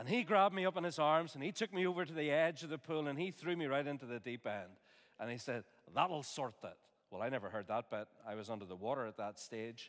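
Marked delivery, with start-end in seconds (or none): 5.9-6.8 put-on Scottish-accented delivery. Retelling what a man said after throwing the speaker into the pool, scottish accent. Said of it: "That was a Scottish accent, by the way".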